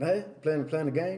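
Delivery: ordinary delivery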